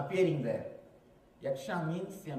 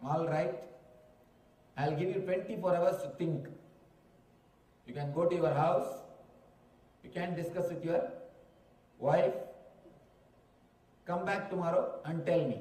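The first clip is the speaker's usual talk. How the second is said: usual speaking voice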